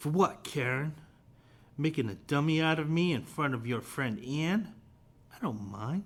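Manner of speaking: sarcastic character voice. Reading a comic character's reply to an apology aloud: sarcastic, a little babyish. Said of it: "he's kind of being a little sarcastic here".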